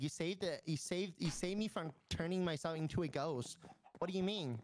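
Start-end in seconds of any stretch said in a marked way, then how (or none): none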